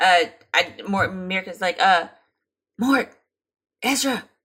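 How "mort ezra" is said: loud attempted whisper that isn't whisperish. Voicing a character calling to two companions: loud attempted whisper. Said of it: "She's trying to whisper".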